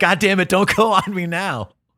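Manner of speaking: held-back, high-pitched, mild half scream. Retelling how a man screamed at his dying pickup truck on the freeway: imitating someone screaming. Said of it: "he's screaming".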